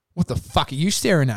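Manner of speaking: imitated angry snap. Retelling a woman's reply after being stared at, imitating an angry snap. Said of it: "She's so angry".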